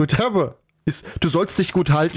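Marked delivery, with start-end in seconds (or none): none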